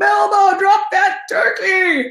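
very high, stretched-out, drawn-out scream. Retelling a dog walk when the dog grabbed a chick: retelling a scream. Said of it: "And so I screamed".

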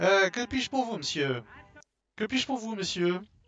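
put-on high, loud elderly woman's voice. Game master voices the receptionist at the front desk, old lady receptionist voice. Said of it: "devant une agent d'accueil, une vieille dame avec un chignon, enfin une vieille dame, 55 ans, petite, courte sur pattes".

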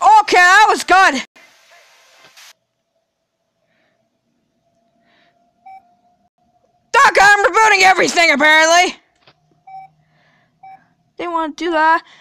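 flustered, panicked, with swooping pitch. Streaming, telling doc they're having to reboot everything, panicking. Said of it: "I'm kind of panicking".

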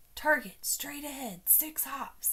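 hushed whispered voice. At an egg hunt, a turkey in a rabbit costume spots an egg, whispered. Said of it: "he whispered to Cow".

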